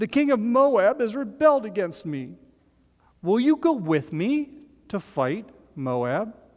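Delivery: high, whining, complaining tone. Narrating a story aloud, voicing the king's message in a whiny voice. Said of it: "you need to put on a whiny voice".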